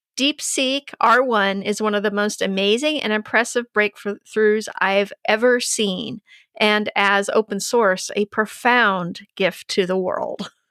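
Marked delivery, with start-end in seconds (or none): none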